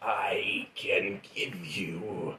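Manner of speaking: very slow, soft, hushed demon voice. A game narrator voices a demon speaking inside a character's head, in a demon voice. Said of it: "He's a demon".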